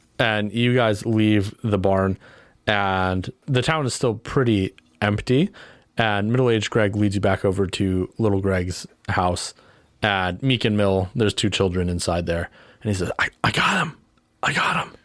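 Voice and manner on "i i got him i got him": high, half-whispered delivery. Voicing a character telling children he got the beast: half-whispering. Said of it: "you don't have to whisper anymore".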